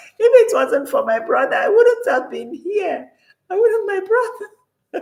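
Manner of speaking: put-on squeaky, very high-pitched baby talk voice. Mocking a line a woman repeatedly says, imitating her baby voice. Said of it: "in her baby's voice".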